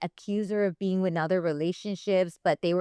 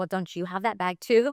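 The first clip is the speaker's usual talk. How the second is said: put-on sassy, snippy tone. Retelling a witness's answer on the stand, imitating a sassy reply. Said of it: "she was being kinda sassy".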